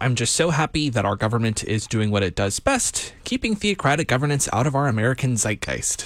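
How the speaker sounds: plain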